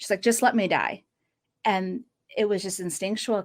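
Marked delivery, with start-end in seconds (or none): 0.2-1.0 mock crying, tearful, pleading voice. Retelling a girl who fought being saved: imitating someone crying. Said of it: "she looks at me and she's crying".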